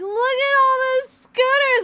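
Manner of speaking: very loud, very high, thrilled excited exclamation. Retelling finding a backyard full of spare scooters, acting out being super excited. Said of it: "I'm super excited".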